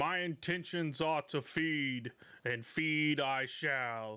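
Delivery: many creature voices speaking as one. The cockatrices answer the party's question about attacking the farms, in a booming chorus voice. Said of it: "you hear this booming voice as all of the chickens".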